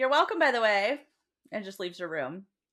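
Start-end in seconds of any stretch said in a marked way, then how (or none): 0.0-1.0 mock irked, put-out, raised, pitched-up voice. Retelling what Feyre says before leaving her room: annoyed Feyre voice. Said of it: "Feyre's kind of annoyed. She's like".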